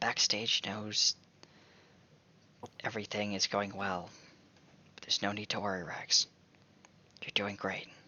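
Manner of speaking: gentle, soothing, soft, hushed half-whisper. Voicing a character leaning over to reassure Rags: half-whispering softly. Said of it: "he just whispers softly".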